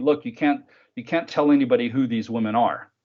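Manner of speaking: ordinary delivery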